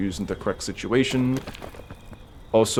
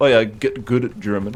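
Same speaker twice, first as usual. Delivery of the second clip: ordinary talk, nothing marked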